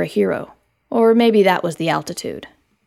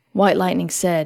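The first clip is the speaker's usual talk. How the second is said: ordinary delivery, nothing marked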